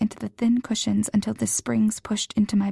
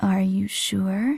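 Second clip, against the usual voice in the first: lilting, sing-song voice. Reading a story aloud, a boy teasing his girlfriend: sing-song voice. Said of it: "he said in a sing-song voice".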